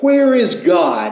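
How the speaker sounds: loud, high stern yell. A clergyman shakes his finger in a boy's face, raising his voice even more. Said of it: "raised his voice even more and shook his finger".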